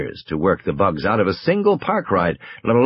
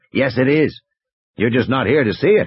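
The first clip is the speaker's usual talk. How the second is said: plain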